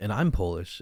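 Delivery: ordinary talk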